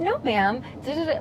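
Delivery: high-toned, sing-song, polite customer service voice.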